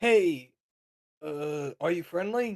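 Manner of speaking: high, shouted, yelled-out call. Shin calls out to a figure that may have already seen him, yelling out. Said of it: "Shin is going to yell out to it".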